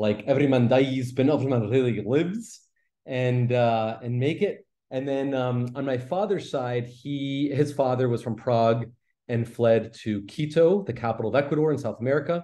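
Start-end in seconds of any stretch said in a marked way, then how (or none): 0.3-2.6 put-on movie-style Scottish accent. Quoting a line from Braveheart in a Scottish accent. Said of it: "so I can do any line from Braveheart".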